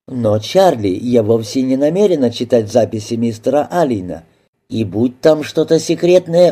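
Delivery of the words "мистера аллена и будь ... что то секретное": ordinary delivery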